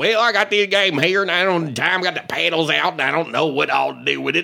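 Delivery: put-on Southern accent. Retelling what people said to him once he got in character, Southern accent. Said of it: "Southern accent".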